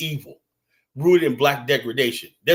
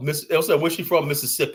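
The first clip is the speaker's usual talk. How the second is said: ordinary delivery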